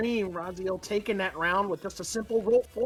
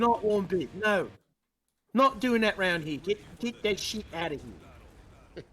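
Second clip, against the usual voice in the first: staunch put-on Australian accent, drawn out. Joking during match commentary about a player: put-on staunch Australian accent. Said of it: "went from British to more staunchly Australian".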